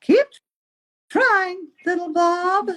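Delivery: very high, gentle, kind, encouraging mom voice. Reading a story aloud, the mom encourages little Bob in a mom voice. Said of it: "I love your mom voice you're doing".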